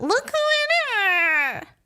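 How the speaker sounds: very high pitch, dragged out long. Retelling how a man greeted a mutual friend on FaceTime, high-pitched Mickey Mouse voice. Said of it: "doing a really high-pitched Mickey Mouse voice".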